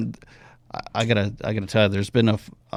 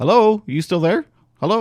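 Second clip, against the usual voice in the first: put-on voice, pitched higher; 10 semitones higher than usual. Retelling an answering-machine prank on callers: retelling own fake voicemail greeting. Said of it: "It'd be like".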